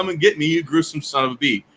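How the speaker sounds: acted-out, imitated called-out yell. Retelling yelling back at a parent across the house: imitating a yell. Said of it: "I just yell back at her from across the house".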